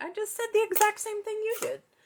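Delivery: very high, squeaky, indignant, disbelieving voice.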